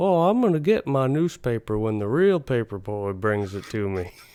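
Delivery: put-on elderly man voice. Retelling a story about an old customer, old man sounding like Hank Hill. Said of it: "sounds like Hank Hill eventually sounded like".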